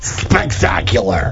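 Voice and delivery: low, slow drunk smoking-frog impression.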